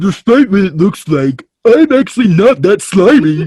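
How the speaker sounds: high-pitched and loud. Voice-acting a monster character, trying a Big the Cat voice. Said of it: "something like, uh, hey, Big the cat".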